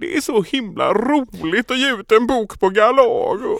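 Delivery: heartbroken, high, slow Gothenburg lilt.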